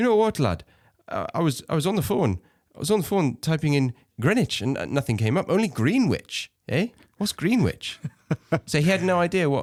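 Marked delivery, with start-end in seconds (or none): 0.0-8.0 put-on pitched-up Geordie lad's voice, Newcastle accent. Telling a story about a British friend, imitating him in a Geordie accent. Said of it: "he's a Geordie. I don't know if I can do the accent".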